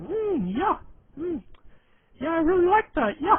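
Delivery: loud, squeaky, very high dopey put-on voice. Doing their deliberately unflattering impression of Adam: Adam voice, dopey. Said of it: "that that's our Adam voice".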